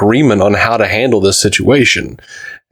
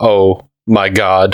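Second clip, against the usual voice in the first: mock crestfallen little-machine voice, hopeless, utterly deflated. Retelling the butter serving bot realizing its purpose, sounding dejected. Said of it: "he just drops his head and goes".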